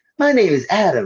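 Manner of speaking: high-pitched character voice. Imitating how the actor voices Adam: high-pitched Adam voice. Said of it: "he's got that real high pitch".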